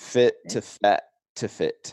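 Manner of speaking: slow, deliberate, each word carefully spaced. Asked to repeat a phrase for listeners, saying it slower. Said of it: "say that slower for people".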